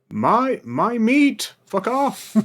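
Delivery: very high, full-throated, top-of-lungs shout. A character stands on a rock shouting toward the trees: shouting at the top of lungs. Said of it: "shout at the top of my lungs".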